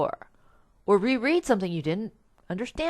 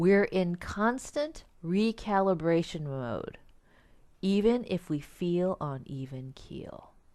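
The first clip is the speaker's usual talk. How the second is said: slow, deliberate, drawn out so it sinks in; 8 dB quieter than usual. A speaker repeats a point so listeners can digest it: said slowly. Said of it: "I'm going to say that again slowly".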